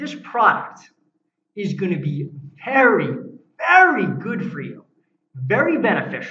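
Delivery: expressive salesman delivery, lively varied inflection. Pitching a product to Bill as an example, lively with inflection. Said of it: "I'm going to say that with inflection in my voice".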